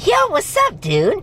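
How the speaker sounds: very high, badly done cartoonish voice. Recounting Greg doing the voice: bad Beast Boy impression. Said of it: "That's my really bad impression of it".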